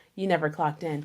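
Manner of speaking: whispered. Retelling a remark overheard from someone after bedtime: imitating someone whispering. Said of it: "I heard him whisper this".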